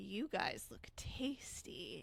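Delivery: very slow, drawn-out witch voice. Voicing a witch who points at the players: voicing a witch. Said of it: "sort of point and go".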